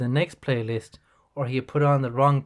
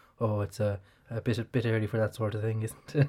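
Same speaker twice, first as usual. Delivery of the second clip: mock mumbling, lower and quieter; 4 semitones lower, 6 dB quieter than usual. Retelling how a priest trying to unlock his phone reacted: imitating someone mumbling. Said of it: "you could just hear him mumbling".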